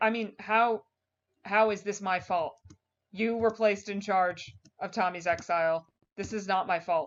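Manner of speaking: plain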